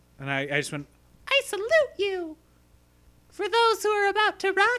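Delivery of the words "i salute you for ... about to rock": very high, raised, animated cartoon puppet voice. Recounting a School of Rock screening with their six-year-old, in an animated puppet voice. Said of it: "I sound like a animated puppet".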